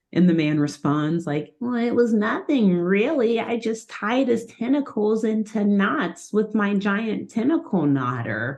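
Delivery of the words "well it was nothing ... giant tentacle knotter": high, put-on nerdy voice. Retelling a scene where the little guy answers how he did it: high nerdy voice. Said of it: "he's got a high voice and talks like this".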